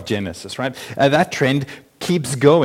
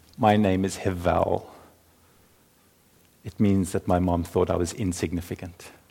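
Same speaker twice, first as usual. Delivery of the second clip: soft voice, much lower pitch, quieter; 7 semitones lower, 7 dB quieter than usual. Speaker retelling Genesis voices the second boy introducing himself, soft voice as Hevel. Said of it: "he says in a soft voice with his eyes on his toes".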